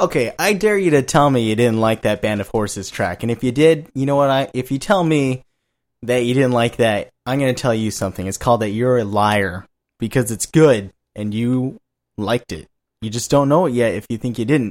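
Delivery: normal talking voice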